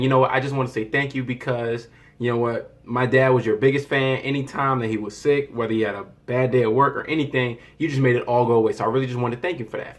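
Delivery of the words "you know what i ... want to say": plain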